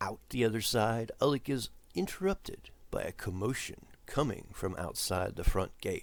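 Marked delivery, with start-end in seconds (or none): none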